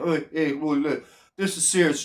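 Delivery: mock, very low, hushed, condescending, patronising tone. Mocking how he talks to the camera in his serious videos, mock-patronising tone. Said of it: "patronise the viewers and say".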